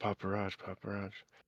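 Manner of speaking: hushed, very quiet half-whisper under the breath. Game master voicing a hologram clone, half-whispering to himself. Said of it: "he kind of whispers to himself".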